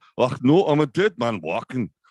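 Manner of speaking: terrible, fake, high Scottish accent. Speaker fearing his mate from Scotland will see this, in a terrible Scottish accent. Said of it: "that was a terrible Scottish accent".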